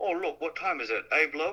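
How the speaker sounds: high put-on South African accent. Retelling how a man talked, in a south african accent. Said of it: "like a South African".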